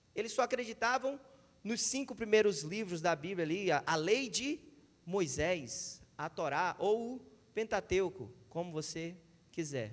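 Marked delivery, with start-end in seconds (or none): 3.7-9.9 slow, low, deliberate, unhurried, careful delivery. Speaker explaining the books of the Bible to sister Valesca, speaking slowly. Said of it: "Estou falando devagar".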